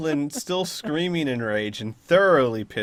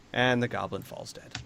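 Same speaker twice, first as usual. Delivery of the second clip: normal talking voice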